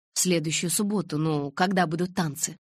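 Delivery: ordinary delivery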